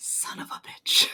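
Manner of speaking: muttering under breath. Storyteller voicing a woman who looks up at it, muttered under her breath. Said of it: "under her breath".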